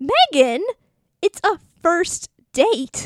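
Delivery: dramatic theatrical delivery. Performing a dramatic read of a scene with a partner: dramatic reading. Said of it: "We're going to do a dramatic read".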